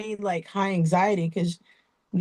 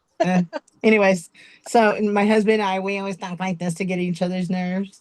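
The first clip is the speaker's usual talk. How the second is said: plain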